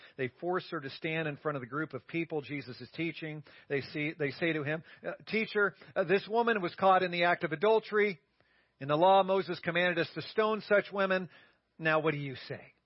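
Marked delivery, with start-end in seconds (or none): none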